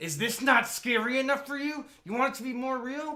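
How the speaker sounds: very high, loud, taunting voice pushed until cracking. Retelling a favorite movie scene: imitating Pennywise breaking his voice. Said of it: "he breaks his voice and just goes".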